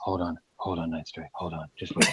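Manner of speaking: put-on seductive bedroom voice. Retelling how a friend asked another player to wait: imitating a friend's bedroom voice. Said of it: "bedroom eyes and bedroom voice going on".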